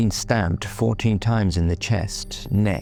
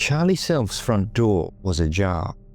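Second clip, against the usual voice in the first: ordinary talk, nothing marked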